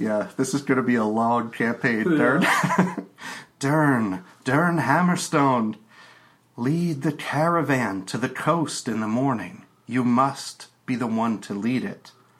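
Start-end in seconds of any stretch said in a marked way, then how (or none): 3.6-12.1 ethereal goddess-like voice. Game master voicing the unseen patron goddess calling to Dern: goddess Atalanta's voice. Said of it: "there's the voice of your patron goddess, Atalanta, not Atlanta, Atalanta, yeah, who's the goddess of balance. / there's the voice of your patron goddess, Atalanta, not Atlanta, Atalanta, yeah, who's".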